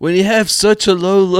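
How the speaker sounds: put-on British accent slipping in. Trying to quote a doctor but unable to do the voice, give a failed Dr. Fauci impression, sounding British. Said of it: "I know why I sound British".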